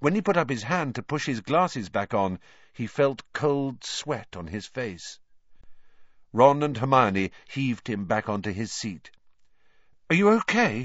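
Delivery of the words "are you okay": nervous, anxious, high, raised pitch. A friend checks on a boy just heaved back onto his seat, asking nervously. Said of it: "Ron asked nervously".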